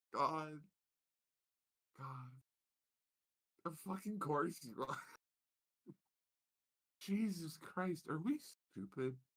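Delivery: half-laughing, on the edge of crying. Reacting in character to a revealed disguise: laughing close to crying. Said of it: "doing the laughing close to crying".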